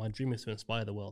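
ordinary delivery

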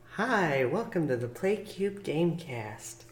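underplayed, much too quiet and soft. Redoing the show's opening greeting more quietly: too soft. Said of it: "too soft".

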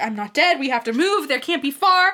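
loud scream, pitch climbing. Retelling a book scene where a character screams: imitating someone screaming.

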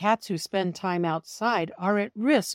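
ordinary delivery

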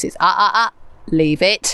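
firm, stern mum-style voice. Demonstrating her dog's command to listeners, in the mummy voice. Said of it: "It's like the mummy voice".

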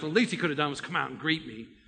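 fast, resentful, muttered grumbling under the breath. Speaker retelling Naaman's story, acting out Naaman grumbling. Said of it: "kind of grumbling under his breath".

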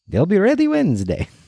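put-on heavy Eastern European accent, very high pitch. Storyteller voicing Mr. Klonsky answering a customer, strong Eastern European accent. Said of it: "in his strong Eastern European accent asks".

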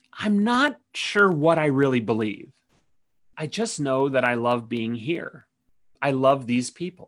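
put-on near whisper, almost whispered. Retelling what a church member said about faith: imitating an almost-whisper. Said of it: "almost in a whisper".

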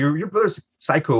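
ordinary talk

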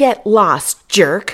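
annoyed bark. Narrator reading a woman ordering a lurking stranger away, barked. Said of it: "the woman barked".

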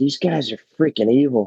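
whispering very low. One character leans close to another's ear, faint whisper under the breath. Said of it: "faintly whispers in her ear, like very low and under his breath".

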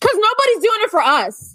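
emotional, worked-up, heated, rushed, high-pitched outburst. Speaker explaining a personal stance, heated and emotional. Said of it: "I'm getting heated about this and emotional about this".

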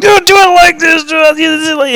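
very high, barking, shouted voice. Speaker retelling how a man yelled at them while they arranged a tree, retelling a yell. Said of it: "he's yelling at me".

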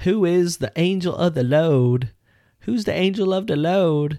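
put-on country accent, drawn out, loud and slow. Quoting someone who walked around saying a line in a country accent. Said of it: "She was saying it the other day with like a country accent".

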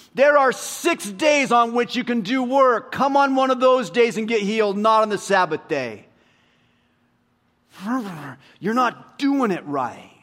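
acted angry, high yell. Retelling the synagogue president scolding the people: imitating an angry yell. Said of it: "He yells at all the people".

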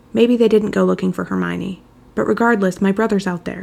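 ordinary delivery, nothing marked

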